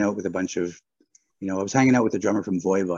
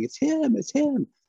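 very high, drawn-out mock sobbing, crying wail. Recounting a cashier who recognized him from a video: imitating screaming and crying. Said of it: "kept screaming and crying".

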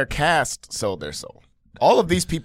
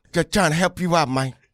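earnest nice-guy tone, leaning on the word "man"; 2 semitones higher than usual. Imitating an actor who adds "man" to every line: imitating Terrence. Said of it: "Terrence says, "Man."".

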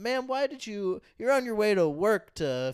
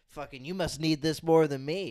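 mock condescension, lower; 6 semitones lower than usual. Imagining what the man giving a dollar said: imitating a condescending tone. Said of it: "'cause maybe he's being condescending".

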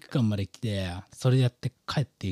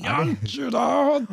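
put-on, distorted, higher-pitched cat puppet voice; 4 dB louder than usual. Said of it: "お前めちゃめちゃうまいじゃん".

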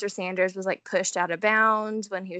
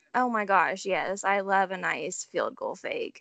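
sarcasm laid on thick, heavy sarcastic tone. Replying to the other speaker's "You love that": sarcastic tone. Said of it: "I'm sure you can hear the sarcasm".

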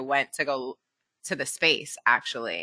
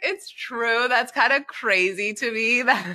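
high, slow, laughing, amused disbelief. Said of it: "I was like".

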